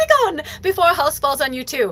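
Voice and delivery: high voice, laughing through words. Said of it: "she starts laughing and she's like".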